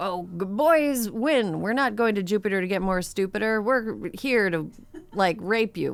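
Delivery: play-acted, scornful, throwaway edgelord-style dismissive voice. Quoting posts by online incels, dismissively imitating a quote. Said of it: "I'm saying it really dismissively".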